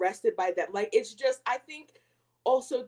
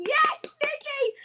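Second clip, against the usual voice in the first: put-on, shrieking, very high-pitched shrill scream. Retelling how they cheer while watching the show: imitating own screaming. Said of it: "I'm always screaming".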